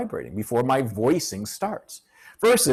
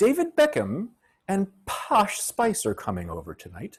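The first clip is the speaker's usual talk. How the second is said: posh royal-style British accent, pitched-up, swooping sing-song; 7 semitones higher than usual. Speaker showing how a line would sound, Queen impression. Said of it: "that's how, you know, the Queen might say it".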